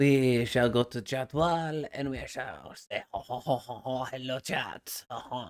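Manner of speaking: playful, slow, put-on French accent. Streamer pausing for an ad break, greeting chat in a French accent. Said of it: "I don't know why I'm doing a French accent".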